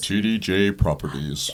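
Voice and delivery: radio announcer voice. Reading out a sponsor's name on the show, in a radio announcer voice. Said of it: "That radio voice".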